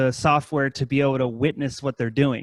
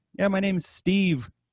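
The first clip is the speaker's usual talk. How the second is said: thick put-on Indian accent, pitched up; 5 semitones higher than usual. Retelling a guy on a call about sending money, thick indian accent impression. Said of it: "hardcore thick Indian accent".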